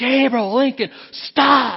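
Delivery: very high, loud, screaming preacher voice. Retelling calling to children crossing the road in a parking lot, retelling a scream. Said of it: "I screamed to the top of my voice".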